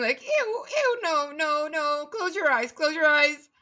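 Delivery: high, squealing, disgusted, panicked squeal. A player voices Nara casting a firebolt in the game, Nara squealing in panic. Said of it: "shrinking away and like squealing".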